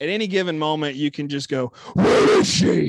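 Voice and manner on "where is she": very loud, rasping voice.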